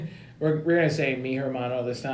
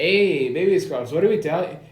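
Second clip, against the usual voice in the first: fake, put-on Mexican accent; 4 semitones higher, 4 dB louder than usual. Retelling what they say when he hangs up on the principal, put-on Mexican accent. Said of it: "the Mexican accent".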